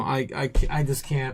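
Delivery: slow, broken, halting, defeated stammer. Reacting to chat about buying while out of money: defeated and broken. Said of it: "I'm just so broken right now".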